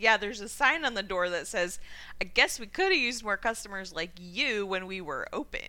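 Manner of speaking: normal talking voice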